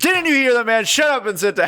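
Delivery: sharp, snapping delivery.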